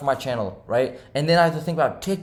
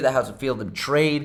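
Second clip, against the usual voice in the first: ordinary delivery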